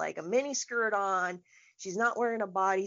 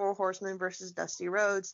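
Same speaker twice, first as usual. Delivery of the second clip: normal talking voice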